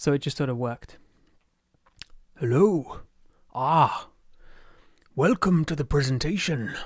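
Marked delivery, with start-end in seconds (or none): 2.4-6.7 rough, passable put-on storybook knight character voice. Opening a presentation, the speaker greets in an Onion Knight voice. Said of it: "Onion Knight voice".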